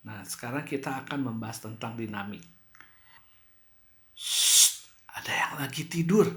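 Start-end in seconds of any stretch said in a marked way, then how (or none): 4.1-6.3 unvoiced, hushed whisper. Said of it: "ini sambil berbisik-bisik".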